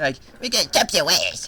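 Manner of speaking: fake, over-the-top, sing-song LA accent. A speaker jokes about a californian accent and mimics how certain people talked, playing it up. imitating an exaggerated la accent. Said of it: "who talked like that".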